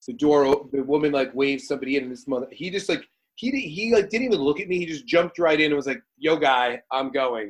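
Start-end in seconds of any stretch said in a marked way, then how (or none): 6.2-7.5 very slow, dragged, attitude-laden delivery. Retelling a man who jumped ahead at the door, mimicking him with attitude. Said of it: "and with an attitude".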